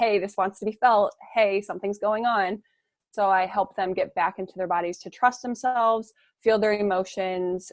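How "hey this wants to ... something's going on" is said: plain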